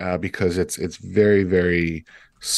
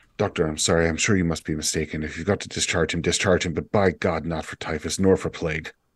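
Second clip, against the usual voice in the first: hushed, close, leaned-in half-whisper. Voicing a lieutenant who leans in to the doctor: half-whispering. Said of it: "leans in and whispers".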